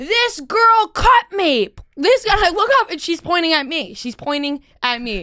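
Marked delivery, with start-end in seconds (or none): 0.0-1.7 put-on old-lady scream, higher and louder. Retelling an old woman pointing at you and screaming to everybody, imitating old lady screaming. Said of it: "an old lady's voice start screaming".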